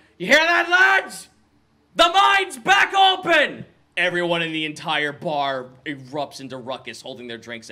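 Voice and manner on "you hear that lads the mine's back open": very loud, very high, shrill, booming scream. A character stands on the bar and announces news to everyone: screaming to the whole bar. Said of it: "screams out to everyone".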